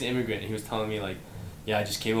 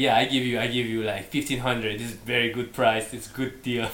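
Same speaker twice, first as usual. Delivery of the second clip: fake accent, slowed way down. Retelling a guy's offer for the speaker's RAV4, in a mock Middle Eastern accent. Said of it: "Is that your Middle Eastern accent?".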